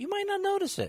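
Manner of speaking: shrill, loud, very high-pitched voice. Explaining retirement plan contributions to another speaker: high-pitched voice. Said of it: "I said that with a high-pitched voice".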